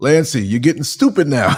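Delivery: put-on teasing, masculine Jamaican accent. Retelling what he would say when the speaker cracked up laughing, in a Jamaican accent. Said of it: "he said it with a Jamaican accent".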